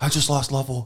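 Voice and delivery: alarmed, high, panicked delivery. Retelling how the medical guy at his station reacts, imitating panic. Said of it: "And he's like panicking".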